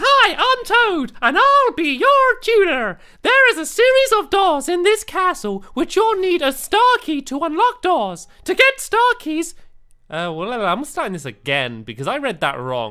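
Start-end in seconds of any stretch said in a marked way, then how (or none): 0.0-9.5 high-pitched, slow cartoon mouse voice. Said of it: "I sound like Mickey Mouse".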